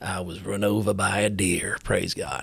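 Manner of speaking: put-on low-pitched Texas accent. Retelling a camo-clad man's testimony at the mic, in a Texas accent. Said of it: "in a kind of a Texas accent".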